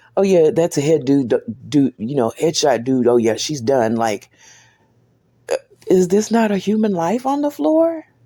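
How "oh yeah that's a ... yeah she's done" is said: put-on light laughing through the words, offhand. Retelling what a man said while chuckling, imitating someone chuckling. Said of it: "he's kind of chuckling when he says it".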